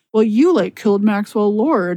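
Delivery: ordinary talk, nothing marked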